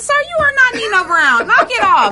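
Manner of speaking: mock scolding, squeaky, high-pitched and bossy.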